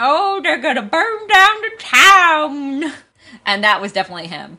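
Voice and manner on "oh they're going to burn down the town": put-on high, loud, gummy toothless old man, town stretched. Describing a film's old man character with no teeth: toothless old man voice. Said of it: "with no teeth, who's like".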